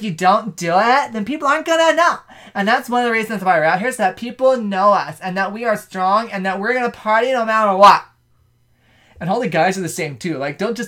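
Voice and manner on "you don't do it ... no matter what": over-the-top, exaggerated girly party girl voice. Explaining to a listener why the girls are out partying, in an exaggerated girl voice. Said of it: "you put way too much effort into the girl voice".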